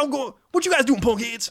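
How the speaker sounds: very high, squeaked-up put-on adult male voice. Retelling how a friend's stepdad talked to the neighborhood kids: imitating a friend's stepdad. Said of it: "That's how he would talk".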